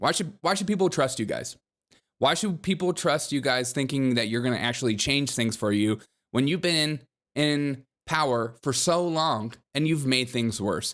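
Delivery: ordinary talk, nothing marked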